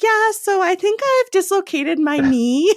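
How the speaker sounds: put-on chirpy, very high-pitched, super upbeat cheery voice. Retelling Jessica's call over the radio, mimicking Jessica's upbeat, cheery voice. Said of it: "super upbeat, cheery voice".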